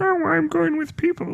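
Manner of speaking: very high, silly voice, lingering on every word. Imitating a friend who never visits when in town. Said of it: "Is that what Justin sounds like?".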